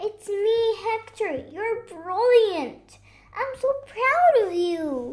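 high, loud, shouted calling out. Hector calls out to Hugo playing in the band, shouting. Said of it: "he shouted".

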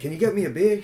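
high-pitched, put-on Boston accent. Retelling a husband's line to his wife, in a boston accent impression. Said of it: "they have these Boston accents".

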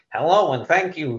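high meek voice.

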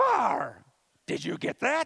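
very high, loud put-on voice, calling out. Retelling a puppet teaching near and far: Grover voice. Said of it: "That's Grover's voice".

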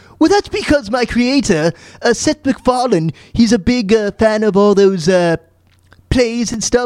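put-on high, posh, British-accented voice. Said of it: "you sound like Rex Harrison".

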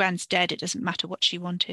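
ordinary delivery

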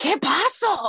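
put-on loud, high little-kid voice calling out. Retelling a little kid at Walmart turning to his brother, loud kid impression. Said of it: "So loud".

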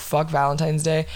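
ordinary talk

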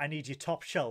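ordinary delivery

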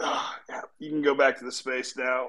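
groggy, mumbled voice like just woken up.

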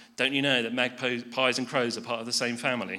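ordinary talk

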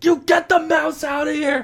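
shrill, loud shriek, pitched way up. Recounting the mouse incident, the speaker re-enacts screaming at their sister: retelling screaming at sister. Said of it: "I'm screaming at my sister".

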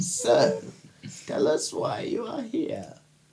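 put-on breathy, whispered old crone voice. Voicing the crone who questions the party: voicing the crone. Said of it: "the crone says".

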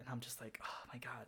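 unvoiced hushed whisper.

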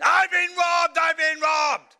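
very loud, high, shrill shouting cry. Retelling being robbed on a train in Poland: retelling a shout. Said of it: "And I start shouting".

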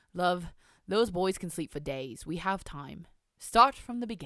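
put-on posh, upper-class, old-fashioned British accent. Reading a story aloud, voicing a male character, posh, old-sounding British accent. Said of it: "My British dialect's so old".

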